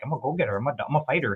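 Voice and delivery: put-on French Canadian accent. Retelling how the speaker's captain in Maine talks; Captain Pelletier's French Canadian accent. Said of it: "so he talks like this".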